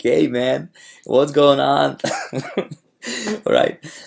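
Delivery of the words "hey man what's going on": loud, casual, everyday dude voice. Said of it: "It's just me playing like".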